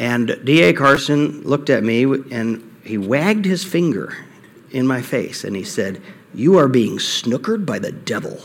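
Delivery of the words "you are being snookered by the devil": put-on line delivered in a British accent. Speaker retells what D.A. Carson told him about his plans: D.A. Carson British accent. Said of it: "with his British accent".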